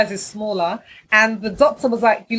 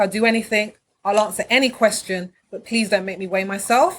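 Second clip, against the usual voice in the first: ordinary talk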